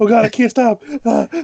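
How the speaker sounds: high-pitched, panicked, hard hyperventilating breathing. Playing a character who starts hyperventilating underground: character hyperventilating. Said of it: "He starts hyperventilating".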